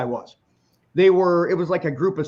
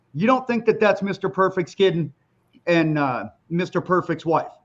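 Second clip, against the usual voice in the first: ordinary talk, nothing marked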